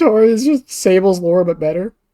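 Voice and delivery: speech broken up by laughter. Sharing a sudden realization with the other speaker, laughing while talking.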